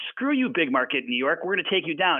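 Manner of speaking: normal talking voice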